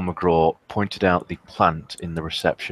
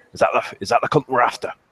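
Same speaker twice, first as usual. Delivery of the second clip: put-on rough, gruff Glaswegian accent, pitched up; 7 semitones higher, 3 dB louder than usual. Voicing a character pointing at a plant: gruff Glaswegian accent. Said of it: "in his gruff Glaswegian accent".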